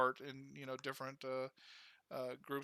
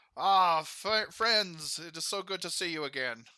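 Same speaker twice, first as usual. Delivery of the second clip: very loud, booming dwarf voice; 4 semitones higher, 10 dB louder than usual. Voicing the dwarf Gundren greeting old friends: voicing the dwarf Gundren. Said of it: "he walks over to the table and says".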